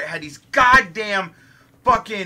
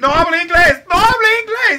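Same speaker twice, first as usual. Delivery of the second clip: put-on screaming, much higher and louder; 11 semitones higher, 7 dB louder than usual. Retelling how Jack jumped out and ran, imitating Jack screaming. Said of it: "he's screaming Spanish shit".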